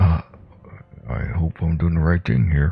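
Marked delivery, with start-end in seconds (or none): 1.1-2.7 soft hushed whisper. In a tabletop game, your character speaks aside to a companion: quiet whisper. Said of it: "I quietly whisper".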